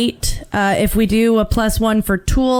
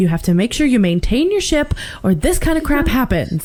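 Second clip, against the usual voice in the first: usual speaking voice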